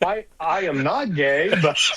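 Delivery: stunned, very slow, halting, stumbling delivery. Retelling a news report where the guest answers the anchor: imitating a shocked man. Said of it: "you can tell he's shocked".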